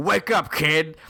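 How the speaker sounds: eighties dad voice, mouth full of cigar. Acting out an imagined movie dad waking his kid: acting a dad chewing a cigar. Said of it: "chewing a cigar, being like".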